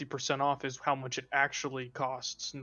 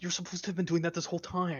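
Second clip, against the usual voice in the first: hushed, higher-pitched whisper in character voice; 5 semitones higher than usual. Whispering in character to another character, blocking the snake from view: whispering in character.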